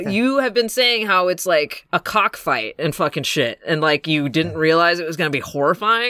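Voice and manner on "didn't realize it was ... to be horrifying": normal talking voice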